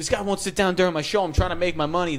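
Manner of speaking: irritated angry rant. Retelling a subway performer screaming at a rider who stood: imitating someone screaming. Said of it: "this guy starts screaming at him".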